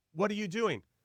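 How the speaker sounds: acted-out angry scolding. Retelling how an older teammate pulled him aside: imitating an angry scolding. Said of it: "basically chews me out".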